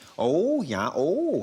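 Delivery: Minnesotan accent, high, polite, credulous and interested. Explaining the vowel sounds of an accent, showing it: Minnesotan accent. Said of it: "the Minnesotan accent".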